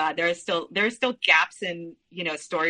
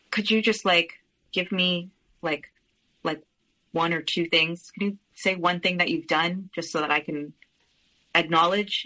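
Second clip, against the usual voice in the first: normal talking voice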